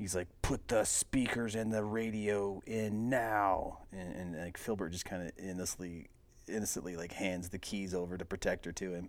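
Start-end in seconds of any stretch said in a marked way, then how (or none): 0.4-3.8 slow, threatening delivery. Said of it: "he's ready to fight".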